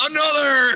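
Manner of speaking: very high-pitched yell. Voicing a character who yells a toast in a cavern: yelling. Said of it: "Basil yells out".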